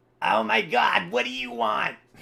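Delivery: very shrill, very high, loud, rasping rough shout. Narrating a scene, voicing someone heard from the back, in a put-on character voice. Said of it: "I'm going to finally do the voice".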